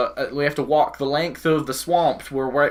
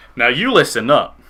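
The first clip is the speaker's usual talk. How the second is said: loud, most charming put-on character voice; 5 dB louder than usual. Playing a character in a role-play scene, told to use his most charming voice. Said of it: "put on your char- your most charming voice".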